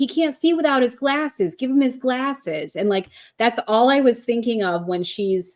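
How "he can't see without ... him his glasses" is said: play-acted, high, tearful, grief-stricken sobbing. Retelling his friend yelling at his wake, retelling a distraught yell. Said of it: "she's yelling".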